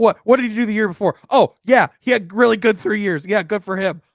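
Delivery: high-pitched, loud mocking send-up. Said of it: "I'm just laughing 'cause it's like".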